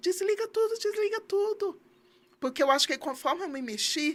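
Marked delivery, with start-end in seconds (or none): 0.0-1.8 high-pitched, frantic, desperate yelling. Retelling waking on bare wires to the teacher's husband: imitating a desperate shout. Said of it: "eu acordei com ele gritando".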